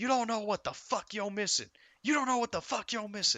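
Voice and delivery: play-acted very high, very loud wrestling-promo scream. Retelling how a woman got in his face: imitating someone screaming. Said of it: "she just starts scream-".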